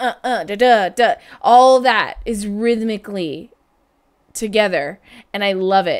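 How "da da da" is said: scatting out a drum rhythm. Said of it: "All of that in the beginning".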